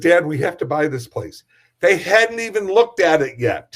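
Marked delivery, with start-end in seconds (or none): none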